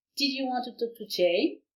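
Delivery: question tune climbing up on Jane. French lesson on english question intonation, rising pitch on final jane. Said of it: "L'intonation est ascendante vers la fin".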